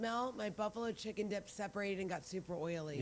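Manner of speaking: normal talking voice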